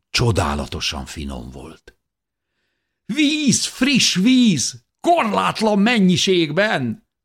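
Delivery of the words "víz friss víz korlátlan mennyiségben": very high, jubilant, joyful, drawn-out shout. After drinking the cold water between the rocks, the narrator calls out, shouting joyfully. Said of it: "kiáltottam örvendezve".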